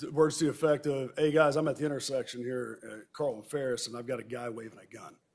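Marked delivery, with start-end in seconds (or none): none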